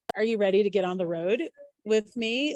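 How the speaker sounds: ordinary delivery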